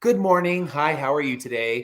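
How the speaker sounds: ordinary delivery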